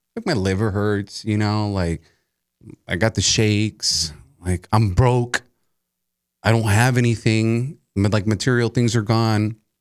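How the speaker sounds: plain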